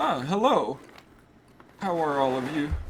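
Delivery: put-on doddering old man voice. Voicing a dotty old man with a staff entering the parlor: old man voice. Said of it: "I love [name]'s old man voice".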